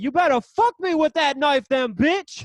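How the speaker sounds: loud high-pitched hollering yell. Retelling a man daring a woman holding a kitchen knife: imitating someone yelling. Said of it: "He's yelling at this".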